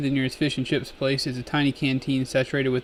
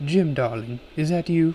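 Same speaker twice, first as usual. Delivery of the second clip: sultry, seductive voice; 3 semitones higher than usual. Through the communicator, Nessie answers the caller, in Nessie's sultry voice. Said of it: "Nessie's sultry voice comes through the communicator".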